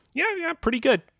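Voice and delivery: very high, breezy, approving voice.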